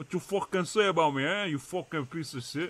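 mock Italian accent voice. Speaker talking back to a friend while fishing, in a put-on italian accent. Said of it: "No way he's doing a Italian fucking accent".

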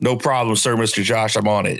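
ordinary talk, nothing marked

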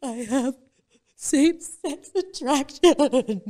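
put-on sobbing voice. Retelling her confession to her friend, reenacting sobbing the words. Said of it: "I'm sobbing".

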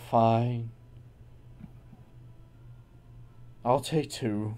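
dull, flat, unenthusiastic, unexcited tone. A player in a tabletop game agrees to buy two items from a seller, unexcited. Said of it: "You don't really sound very excited".

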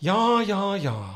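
ridiculously posh, mocking send-up voice. Showing how his mum impersonates him, mum's posh impression of him. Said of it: "whenever she wants to impersonate me".

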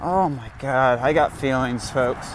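normal talking voice

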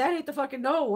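ordinary delivery

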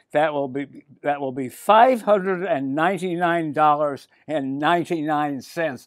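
ordinary delivery

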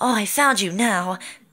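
put-on high, girly, gossipy voice. Demonstrating the voices they make for characters, doing a gossipy girl voice. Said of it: "for a gossipy girl, I'd do".

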